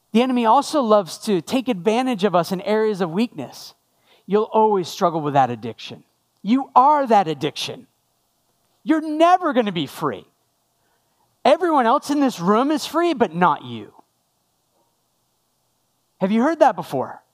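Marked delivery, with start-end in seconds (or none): 4.2-13.9 mock accusatory voice. Voicing what the enemy says to a struggling person: imitating an accusatory voice. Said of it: "the enemy always uses an accusatory voice".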